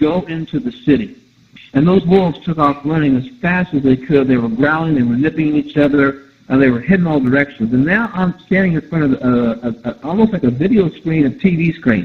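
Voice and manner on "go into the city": usual speaking voice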